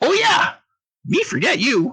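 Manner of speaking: very high, squeaky, swooping goblin creature voice. Voicing a wide-eyed goblin who greets the group: goblin voice. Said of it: "the goblin ... looks wide-eyed at you and is like".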